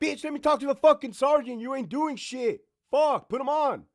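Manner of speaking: put-on furious yelling, loud and high. Acting out someone demanding to talk to the sergeant, acting out an angry yell. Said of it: "why do you gotta yell?".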